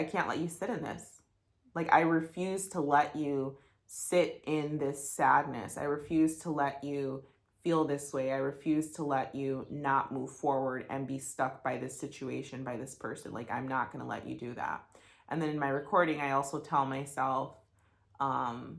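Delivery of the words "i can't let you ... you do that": ordinary delivery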